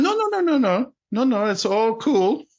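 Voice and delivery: slow, light put-on German accent. Retelling what he said to reassure everyone, in a slight German accent. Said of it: "sorry if I put like a slight um, German accent on there".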